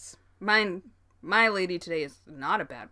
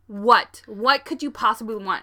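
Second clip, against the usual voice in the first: mock-livid, put-on anger; 3 semitones higher, 7 dB louder than usual. Retelling answering a catcaller in a car, retelling being livid. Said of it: "I'm livid".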